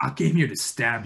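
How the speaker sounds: threatening, menacing fatherly man's voice. Reading a story aloud in the voice of the man at the door. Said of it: "the voice of the guy who's knocking the door".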